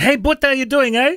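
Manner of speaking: put-on South African accent. Retelling what former South African coworkers would say: imitating South African accent. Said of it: "I used to work with South Africans and they'd say".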